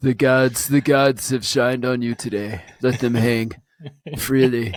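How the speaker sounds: totally stoned, spaced-out voice. Repeating the joke, doing Trump as if he were stoned. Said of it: "that's like Trump if he was stoned".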